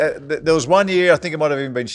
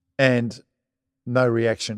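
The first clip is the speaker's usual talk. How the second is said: usual speaking voice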